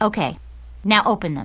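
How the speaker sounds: ordinary delivery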